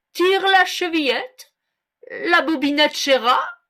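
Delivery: called out with the voice smoothed a little. Reading a fairy tale aloud, the wolf answers the girl: wolf calling out, softening his voice. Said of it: "Le loup lui cria en adoucissant un peu sa voix".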